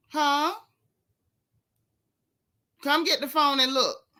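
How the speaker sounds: hollering. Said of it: "she just hollering in the house at one of her children".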